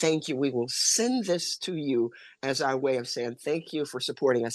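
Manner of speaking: ordinary talk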